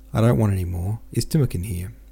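usual speaking voice

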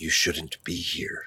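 very soft whisper under the breath. Pouring wine and warning the guest unseen: whispering. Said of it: "he whispers".

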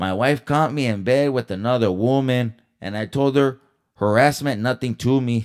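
high, loud cartoon Mexican accent. Rereading the word-of-the-week joke, like a cracked-out Speedy Gonzalez. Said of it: "Sound like a fucking cracked out fucking Speedy Gonzalez".

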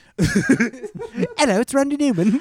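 slow, very high, drawn-out British accent. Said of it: "What if he has, like, a British accent?".

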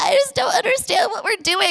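acted crying in a very high-pitched voice. Retelling a phone call from a confused girl, imitating her crying. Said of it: "she calls me and she's like crying".

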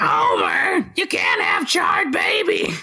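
very high, throat-straining voice. Laughing with another speaker, the speaker objects in a Marge voice. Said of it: "using the marge voice just hurts my throat".

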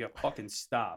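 ordinary talk

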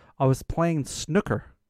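casual, put-on American accent. Retelling what a game character answered: imitating an american accent. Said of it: "He had an American accent".

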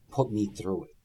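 quiet, hushed, secretive half-whisper. Retelling a line said during a match: imitating a half-whisper. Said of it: "Shane whispers to him".

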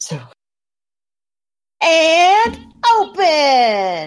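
loud, high-pitched robot voice. Sharing a favourite video game line, saying it in Claptrap voice. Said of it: "I'm going to say it in character".

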